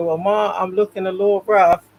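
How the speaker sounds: normal talking voice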